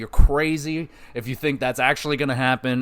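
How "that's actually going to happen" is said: normal talking voice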